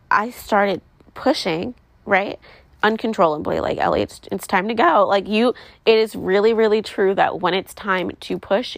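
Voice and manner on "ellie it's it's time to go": normal talking voice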